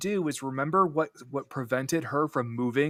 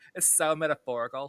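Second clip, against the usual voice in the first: put-on Valley Girl accent. Quoting a film character's line in a Valley Girl accent. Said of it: "giving Ki Woo now a, like, a Valley Girl accent".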